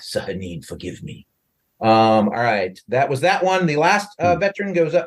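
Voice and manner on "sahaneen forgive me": muttered under breath, lower and quieter. Voicing an enemy soldier mid-fight, muttered under his breath. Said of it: "you hear under his breath".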